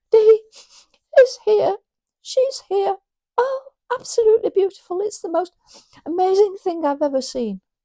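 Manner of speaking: tearful, overwhelmed, very high-pitched, rushed gushing delivery. Speaker retelling a new dad's phone call, imitating a dad crying. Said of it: "I'm sorry I'm crying".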